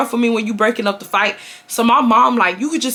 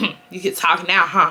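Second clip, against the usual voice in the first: put-on snide voice, lower pitch; 4 semitones lower than usual. Retelling a man making side comments at her, quoting him: mocking a snide side comment. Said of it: "making side comments like".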